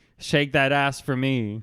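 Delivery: normal talking voice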